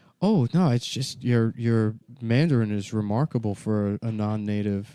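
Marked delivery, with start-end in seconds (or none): none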